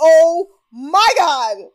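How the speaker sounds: blurted out in dismay. Alone in the office, recalling a reaction, retelling exclaiming out loud. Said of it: "Out loud".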